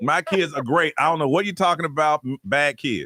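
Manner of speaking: ordinary talk, nothing marked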